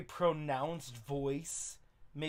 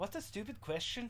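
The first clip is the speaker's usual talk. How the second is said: soft, pitched-up Irish accent for a character; 6 semitones higher, 6 dB quieter than usual. Trying out voices for a character, testing an irish accent.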